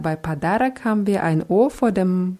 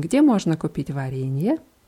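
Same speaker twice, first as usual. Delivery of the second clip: Russian question intonation, ending on варенье; 3 semitones lower than usual. Russian lesson, a phrase stressed like a question: question intonation. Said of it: "Das muss man natürlich dann auch wie eine Frage betonen".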